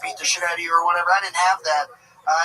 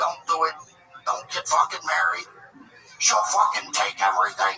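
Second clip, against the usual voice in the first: put-on old man voice; 2 semitones lower than usual. Retelling how an old guy at a bar warned against marriage: imitating an old guy at a bar. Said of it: "some old guy sit next to you and he goes".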